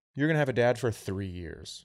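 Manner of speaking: normal talking voice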